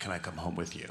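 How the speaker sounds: low, eerie, unsettling, creepy voice. Retelling walking up to Mom at a courthouse press conference: retold creepy voice. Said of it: "I said in a creepy voice".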